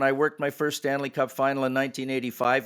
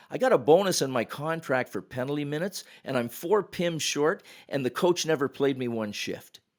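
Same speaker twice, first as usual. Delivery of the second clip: plain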